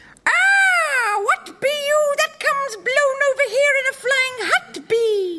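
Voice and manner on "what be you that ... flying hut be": put-on witch character voice. Told to stay in character as the witch, she greets a newcomer in a put-on witch voice. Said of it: "that's amazing".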